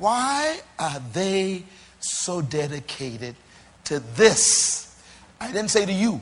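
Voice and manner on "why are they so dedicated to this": very slow, low, deliberate, drawn-out delivery. Speaker repeats their question after announcing they will say it slow; very slow. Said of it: "I'm going to say it slow".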